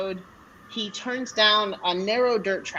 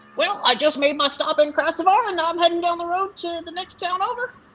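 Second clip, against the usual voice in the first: cheerful, chatty, high-pitched little goblin voice; 8 semitones higher than usual. A goblin with a pack tells a traveler where he's delivering: goblin voice. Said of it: "you can see in the distance there is a goblin who is just making his little way with a pack on his / you can see in the distance there is a goblin who is just making his little way with a pack on his".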